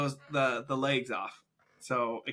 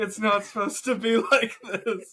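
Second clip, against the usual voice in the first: imitated sobbing, higher and louder; 8 semitones higher, 5 dB louder than usual. Retelling someone wringing a pheasant's neck: imitating someone crying.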